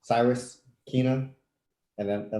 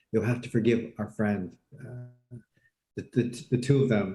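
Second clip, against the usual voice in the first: acted hushed whisper. Voicing a character leaning in to whisper to another character: whispering in character. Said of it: "leans in and whispers".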